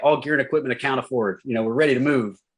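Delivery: routine readout, rapid, rushed and rattled off. Retelling a soldier's radio report under fire: imitating someone rattling off a report. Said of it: "he's just rattling off his report".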